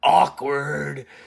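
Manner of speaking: gruff, croaking, raspy character voice. Retelling the other's joke line: Arbiter voice. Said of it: "the fucking Arbiter voice being like".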